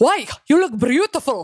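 failed put-on German accent. Retelling what her date said to her, in a bad German accent. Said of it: "it's a German accent?".

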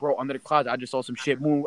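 ordinary delivery

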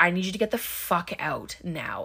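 mock-calm, imitated calm voice. Recapping a scene where a character orders someone out, imitating a calm voice. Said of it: "calmly like".

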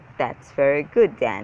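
ordinary delivery

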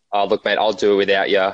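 ordinary talk

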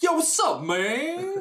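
put-on voice, very high, loud, with drawn-out words.

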